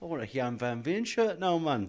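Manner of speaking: loud, terrible put-on Geordie accent. Imitating geordie fans wanting a shirt: terrible geordie accent. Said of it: "an absolutely terrible Geordie accent".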